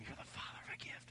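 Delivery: soft, unvoiced, breathed-out whisper. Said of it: "I whisper over them".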